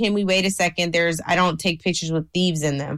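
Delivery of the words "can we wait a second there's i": plain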